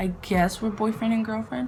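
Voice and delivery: plain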